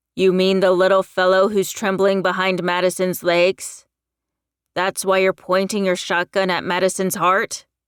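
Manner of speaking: growling. Pointing his own gun at Kip, a man answers him: growled. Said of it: "His nostrils flared as he pointed his own gun at the guy. / he growled".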